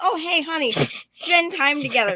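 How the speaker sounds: loud, girly put-on wifey voice, laid on thick. Acting out the adventure date book's message: mock wifey voice. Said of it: "it's very wifey".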